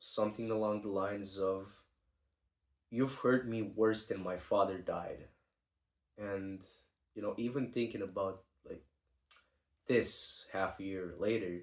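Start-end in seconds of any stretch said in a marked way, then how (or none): 2.9-5.3 put-on deadpan, not tearful. Quoting what an ex said during the breakup, retelling a deadpan line. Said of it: "with like a very deadpan stare".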